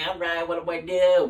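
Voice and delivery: cartoon cook character voice. Retelling his first day as a fry cook: SpongeBob voice. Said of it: "I felt a lot like SpongeBob because I had the voice for it".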